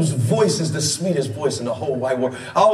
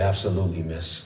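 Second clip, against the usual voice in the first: very low, soft, forced-deep put-on teenage voice; 12 semitones lower, 7 dB quieter than usual. Retelling answering her at fourteen while trying to be smooth, in a deepest 14-year-old voice. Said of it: "I put on my deepest 14-year-old voice".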